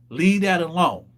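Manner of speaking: ordinary delivery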